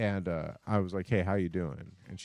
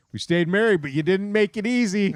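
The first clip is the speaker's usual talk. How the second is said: shrill, very loud, playful joking teasing jab; 12 semitones higher, 8 dB louder than usual. Telling a story, the speaker repeats the joking remark once made to their spouse. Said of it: "I very jokingly looked at her".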